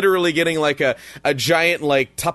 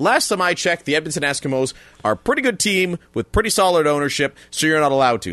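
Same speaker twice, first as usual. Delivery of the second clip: usual speaking voice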